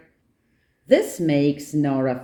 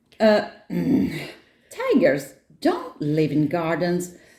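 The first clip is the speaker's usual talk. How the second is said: ordinary delivery, nothing marked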